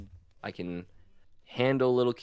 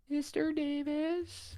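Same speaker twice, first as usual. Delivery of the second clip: put-on tiny child's voice, very high and soft; 6 dB quieter than usual. Retelling a child calling out from the seats: imitating a child's little voice. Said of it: "I hear a little voice go".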